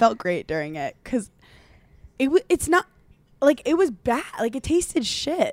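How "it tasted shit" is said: pitched-up, British-sounding delivery. Telling another speaker that a meal tasted bad: sounding British. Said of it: "You just sounded l-, like, British".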